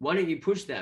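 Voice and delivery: ordinary talk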